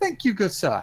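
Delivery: grand, haughty manner. Thanking a dock worker in character: big haughty voice. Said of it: "In a big haughty voice".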